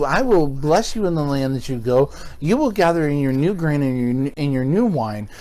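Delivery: ordinary talk, nothing marked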